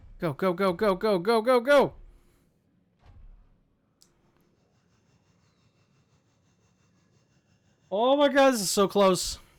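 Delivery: anxious, panicky voice, drawn out. Racing to reach the Cyclops in hardcore mode: panicking. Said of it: "if you're wondering why I'm panicking".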